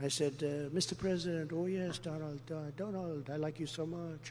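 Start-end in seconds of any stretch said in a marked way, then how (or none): 1.5-4.3 soft, awful, terrible fake French accent. Retelling a phone call to Macron, give his reply as a Macron impression in a terrible French accent. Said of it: "That is the worst French accent".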